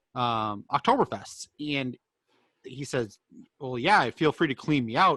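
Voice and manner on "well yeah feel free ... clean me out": usual speaking voice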